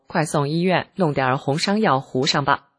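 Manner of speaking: plain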